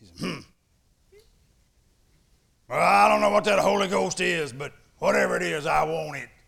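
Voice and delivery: very loud, rough gravelly big-man voice. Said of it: "He with his big old gravelly voice said".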